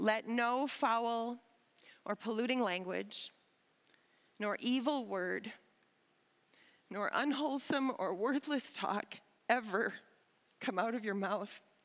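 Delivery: unhurried, careful, slow and deliberate reading aloud. A speaker reads scripture aloud to listeners, reading slowly. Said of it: "as I'm reading slowly".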